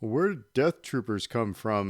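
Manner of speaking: put-on dim-witted voice, loud and dopey. Talking to Dave, mimicking people who were ticked off, put-on dumb mocking voice. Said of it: "by using that dumb voice".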